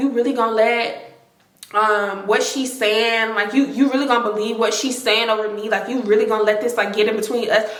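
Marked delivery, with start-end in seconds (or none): none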